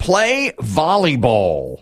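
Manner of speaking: slow, stretched-out, drawn-out game show announcer-style call.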